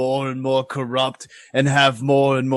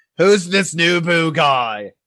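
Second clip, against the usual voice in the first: loud, slow, deliberate voice, called out; 4 semitones higher, 3 dB louder than usual. A player's character asks the room about an unknown name: asking loudly. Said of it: "and ask loudly about it".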